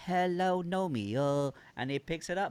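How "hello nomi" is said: put-on Chinese accent with a higher voice. Retelling trying the greeting to Nomi again, say it in a Chinese accent. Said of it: "let me try with a Chinese accent".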